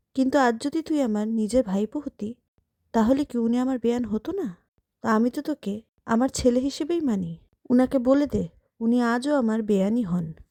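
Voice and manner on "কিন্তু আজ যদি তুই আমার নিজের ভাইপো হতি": ordinary delivery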